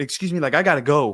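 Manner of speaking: very loud, mock sassy tone. Retelling how a woman in a line pushed past a man; imitating her sassy. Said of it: "real sassy".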